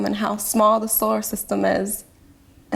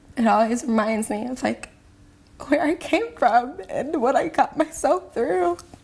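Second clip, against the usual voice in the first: tearful speech through crying; 4 semitones higher than usual. Answering an interviewer about looking at old scars, crying while talking. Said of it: "even though you're crying".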